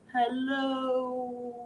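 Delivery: hello dragged out as slowly as possible. Leading a hello game, saying hello as slow as possible, very slow drawn-out hello. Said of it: "Let's say hello as slow as we can".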